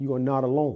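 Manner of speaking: ordinary talk, nothing marked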